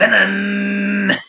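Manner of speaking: very loud, drawn-out, engine-like roaring growl. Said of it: "sounds like a car engine. Am I doing a such a terrible [name] uh, imitation?".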